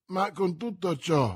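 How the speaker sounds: plain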